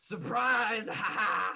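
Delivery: shrill pirate voice yell, very high and loud. Game master voicing a pirate as he drives his scimitar through a woman, pirate yelling. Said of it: "drives his scimitar through her chest and yells".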